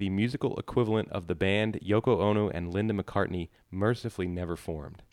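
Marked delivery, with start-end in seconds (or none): none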